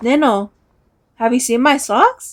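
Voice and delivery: completely earnest, dead-serious, straight tone. Retelling how a brother asked about his socks: imitating a dead serious question. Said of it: "dead straight, all serious".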